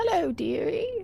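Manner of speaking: put-on soft, high-pitched little old lady voice. Speaker voices a figure disguised as an old woman greeting the other speaker, old woman voice. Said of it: "I just have to put on a voice".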